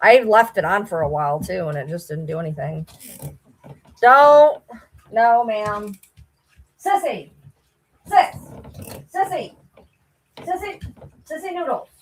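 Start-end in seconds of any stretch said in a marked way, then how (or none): 6.8-11.9 breathy, hushed calling out. Calling out a name to someone who can't hear: yelling a name. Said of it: "I don't know why I'm yelling".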